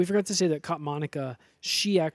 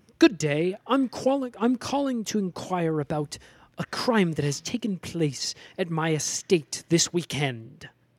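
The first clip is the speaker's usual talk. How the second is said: put-on mid-Atlantic accent. Retelling a woman caller's words to Ross, in a Mid-Atlantic accent.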